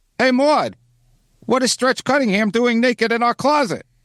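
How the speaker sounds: very high-pitched, sitcom-style put-up voice. Trying a line for the other speaker as Bill Macy: Bill Macy impression. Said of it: "I did the Bill Macy for him".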